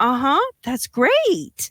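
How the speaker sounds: put-on high, sing-song, indulgent mother voice. Voicing a mother looking down at her excited kid: mother humoring an excited child. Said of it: "a mother or something like that will basically look down at her kid".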